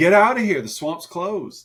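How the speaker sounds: mock yelling. Retelling a man in a boat yelling after them: imitating someone yelling. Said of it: "He's yelling at him".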